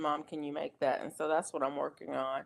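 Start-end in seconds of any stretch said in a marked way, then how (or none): none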